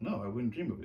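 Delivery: ordinary talk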